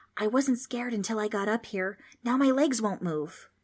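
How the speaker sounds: hushed, whispering voice. Reading a story where a scared boy admits his legs won't move: whispering. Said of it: "He whispered".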